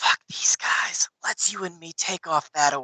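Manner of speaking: hushed, private whisper. Playing a character whispering in another character's ear to persuade her: whispering in her ear. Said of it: "But I am whispering in her ear".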